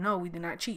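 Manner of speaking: put-on confident, sure-sounding tone. Retelling own answer when the teacher asked a last time: imitating own confident denial. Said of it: "like I knew what I was talking about".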